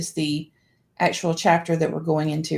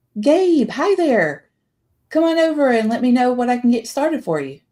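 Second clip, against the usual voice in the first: bubbly, lilting, pitched-up welcoming tone; 7 semitones higher, 4 dB louder than usual. Narrator reading the greeting of the woman at the counter, in a bubbly voice. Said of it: "Hearing the bubbly voice of the woman".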